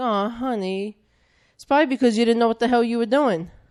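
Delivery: play-acted syrupy, sugary, doting sweet delivery. Retelling her dad's reply after she lost her job, in a mock-sweet tone. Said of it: "saying something offensive, but in a sweet tone".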